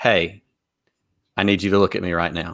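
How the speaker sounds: steady, kind, firm but gentle voice. A father shows how his wife gets their girls' attention, in a firm but gentle mom voice. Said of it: "the firm but gentle mom voice that goes".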